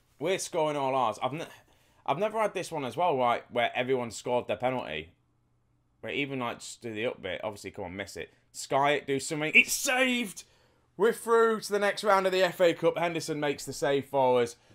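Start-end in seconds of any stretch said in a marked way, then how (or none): 9.6-13.0 ecstatic, celebratory shout, very high and loud. Speaker reacting live as a penalty save sends their team through, loud celebrating. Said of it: "That was a little bit loud".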